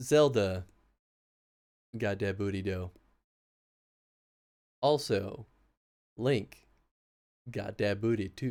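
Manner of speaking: deadly serious, solemn voice. Deliberately saying a joke line in a serious voice. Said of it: "say something in a serious voice".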